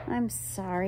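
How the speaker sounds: ordinary delivery, nothing marked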